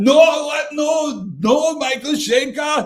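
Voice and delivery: fake, bad Swedish accent, very high. Arguing over a guitarist list, the speaker imitates Johan in a bad Swedish accent. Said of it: "That was not a Swedish accent".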